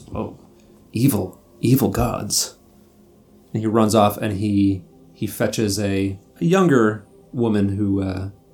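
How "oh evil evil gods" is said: put-on wispy old man character voice. Voicing an old library caretaker answering the players: wispy old man voice. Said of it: "wispy old man ... looks at you and says".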